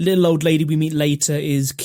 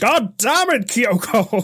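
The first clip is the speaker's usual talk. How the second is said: imitated screaming man, higher; 7 semitones higher than usual. Retelling a scene where the colonel scolds a girl: imitating the colonel screaming. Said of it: "the colonel is screaming at the little girl Kyoko".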